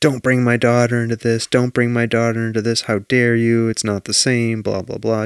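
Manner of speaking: normal talking voice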